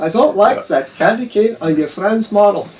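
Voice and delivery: put-on German accent. Relaying what a man told him, quoting him in a German accent. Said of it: "He said in this German accent".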